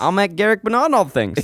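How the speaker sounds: attempted put-on accent verging on New Zealand. Signing off a podcast after admitting they can't do it, an attempted put-on accent. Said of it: "or is this more New Zealand?".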